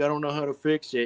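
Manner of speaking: frantic rushed babble. Retelling a movie scene, imitating frantic Han. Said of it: "Han's just this frantic".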